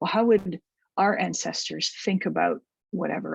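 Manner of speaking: ordinary talk, nothing marked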